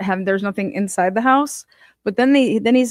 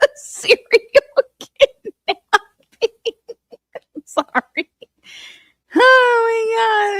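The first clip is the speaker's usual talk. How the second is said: higher voice, talking through laughter; 14 semitones higher, 4 dB louder than usual. Reacting to what another speaker just said, laughing while talking. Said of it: "I gotta breathe".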